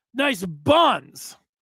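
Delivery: ordinary talk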